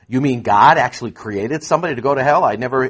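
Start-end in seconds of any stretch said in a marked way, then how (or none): none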